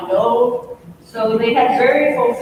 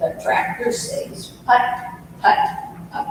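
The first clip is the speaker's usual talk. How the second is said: drawn-out, breathy, hushed southern drawl, slow; 4 semitones higher, 5 dB quieter than usual. Retelling how a two-year-old answered what the tractor says, saying it real slow. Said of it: "he'd say real slow".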